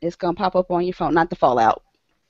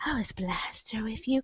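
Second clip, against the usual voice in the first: put-on flirty, mock-seductive voice, much quieter; 3 semitones higher, 15 dB quieter than usual. Retelling how she asked a woman about Blaster, in a put-on flirty voice. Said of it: "Flirting by proxy".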